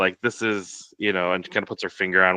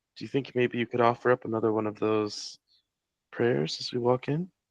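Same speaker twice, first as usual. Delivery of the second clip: hushed, soft, close-up half-whisper, as if in the ear; 4 semitones higher, 7 dB quieter than usual. As the group walks in, [name] leans to Pip's ear, half-whispering. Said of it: "just kind of whisper in his ear".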